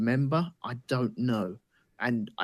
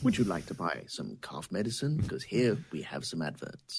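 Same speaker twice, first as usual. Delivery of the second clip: put-on cool voice, much lower; 7 semitones lower, 5 dB quieter than usual. Describing an actor whose name escapes him: imitating an actor's cool voice. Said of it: "it sounds like this every time he speaks".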